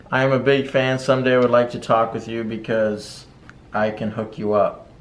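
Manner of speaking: normal talking voice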